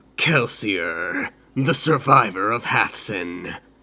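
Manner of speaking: grating, grinding, inhuman creature voice. Narrator reads the Inquisitor holding Kelsier by the neck, grinding creature voice. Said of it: "the creature said in a grinding voice".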